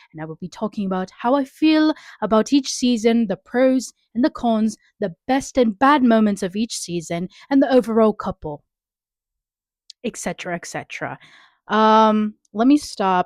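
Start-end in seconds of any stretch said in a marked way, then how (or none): 0.1-10.6 put-on British accent. Opening a podcast episode about Bridgerton: put-on British voice. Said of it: "Let me stop with the British voice".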